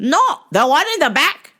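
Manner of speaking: rude, high-pitched female voice. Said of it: "this rude-ass Indian lady".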